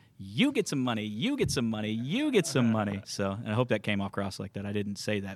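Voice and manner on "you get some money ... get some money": swooping, animated announcer voice with swinging pitch. Imitating a giveaway announcement to the attendees: Oprah voice. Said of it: "we were gonna be like Oprah".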